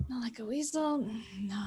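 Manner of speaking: muttering, mumbling under the breath. Voicing a character deep in a book, muttering animal names: muttering to oneself. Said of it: "muttering different animal names out loud".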